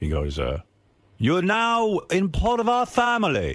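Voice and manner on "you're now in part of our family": put-on high, slow British accent. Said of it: "He's British".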